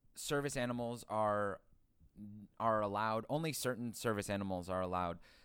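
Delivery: ordinary talk, nothing marked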